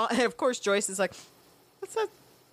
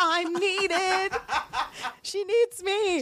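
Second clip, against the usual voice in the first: mock giddy, high, gleeful delight drawn out very slowly; 8 semitones higher than usual. [name] acts out her own past reaction, retelling own past glee. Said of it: "hear the glee in [name]".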